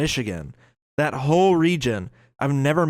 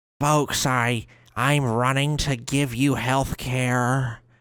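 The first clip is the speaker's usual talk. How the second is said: put-on slow, laid-on Southern accent with stretched "care". Mocking a congresswoman's campaign voice: Haley Stevens impression. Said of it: "I have never heard a Michigander that sounds like that".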